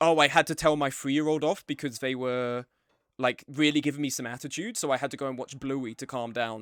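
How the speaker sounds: usual speaking voice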